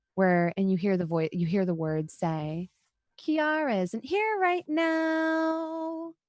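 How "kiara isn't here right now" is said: strange, whimsical voice, very high, very slow, stretched out. Narrating a voice drifting on the wind from behind a house, Alice's whimsical strange voice. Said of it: "a very kind of whimsical, strange voice".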